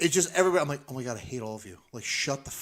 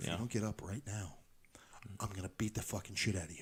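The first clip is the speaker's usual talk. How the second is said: barely audible, low, hushed half-whisper; 6 semitones lower, 14 dB quieter than usual. Retelling escorting a guy out who wouldn't get up, retelling a half-whisper. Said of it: "and I whispered".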